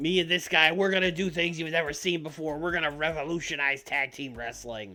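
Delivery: cocky wrestling promo voice. Acting out a planned wrestling promo: cocky Flying Brian promo. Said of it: "But, like, in a cocky way".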